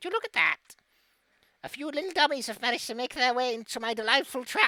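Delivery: put-on high, loud, cackling, gloating old crone voice. A hag calls from the lake shore to the party caught in her trap, cackling. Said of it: "you hear a cackling voice coming from the edge of the water. / a nice old lady with a crooked nose, green skin. Not exactly the pristine beauty you might expect, but man, that hair goes to her feet. /".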